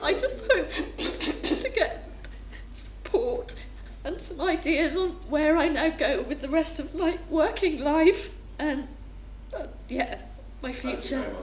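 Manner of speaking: tearful, crying while speaking. Newly registered as sight impaired, telling the group their hopes: crying while speaking. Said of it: "Sorry for crying".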